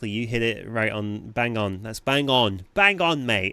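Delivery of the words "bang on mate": hammed-up put-on British accent, loud and high. Agreeing with a chat comment: british accent. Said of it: "I went really British there for a second".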